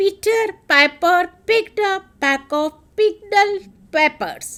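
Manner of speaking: deliberate, careful, slow delivery. Demonstrating a tongue twister before speeding it up: slow pace. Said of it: "I'm speaking slowly".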